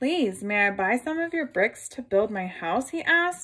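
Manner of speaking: ordinary delivery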